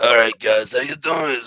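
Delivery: put-on seventy-year-old smoker voice. Joking about sounding sick on the show: put-on seventy-year-old smoker voice. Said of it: "Like a seventy-year-old smoker from, like, World War Two".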